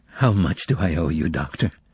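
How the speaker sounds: quiet, soft, quavering, trembling voice. Reading a story aloud, a patient asks the doctor his fee: soft, trembling voice. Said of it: "asked in a soft, trembling voice".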